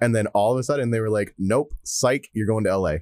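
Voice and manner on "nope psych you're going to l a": ordinary talk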